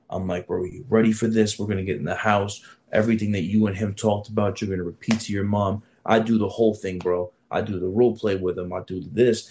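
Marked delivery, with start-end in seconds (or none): none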